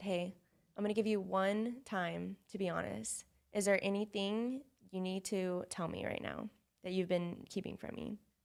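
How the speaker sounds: normal talking voice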